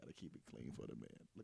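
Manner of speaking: breathy, hushed whisper. Speaking into the mic during a group conversation, whispering. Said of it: "I'm whispering on the mic".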